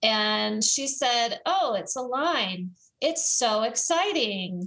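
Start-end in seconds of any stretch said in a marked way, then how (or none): 1.4-4.7 slow drawl dripping with sarcasm. Retelling the daughter's reaction to a zoomed-out map, imitating a sarcastic reply. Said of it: "in this really sarcastic voice".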